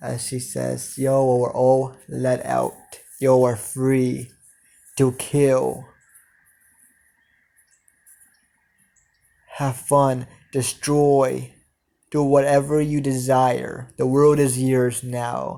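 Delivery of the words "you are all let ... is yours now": flat, machine-like mechanical robotic voice. Narrating a story where she speaks to those she freed: robotic voice. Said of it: "says in a robotic voice".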